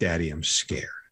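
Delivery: put-on crying. Father recalling his son's reaction after reading a book, imitating Dominic crying. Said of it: "started crying right there on the spot".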